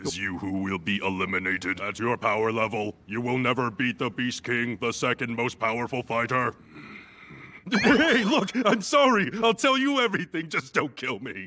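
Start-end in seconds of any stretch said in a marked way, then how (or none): 0.0-6.5 synthetic, machine-like robotic speech. A fighter answering his interrogator, in a high-tech robot voice. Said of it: "what happened to your high-tech robot voice?".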